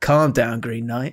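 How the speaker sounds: mock under-breath mutter. Speaker retells how a friend talked back to a substitute: retelling a muttered remark. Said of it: "under his breath muttered".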